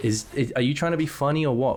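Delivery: ordinary talk, nothing marked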